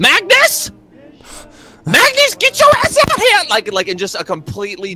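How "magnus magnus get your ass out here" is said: shrill, very high, swooping holler. A woman in the story turns and yells for Magnus, yelling. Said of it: "and then she just yells".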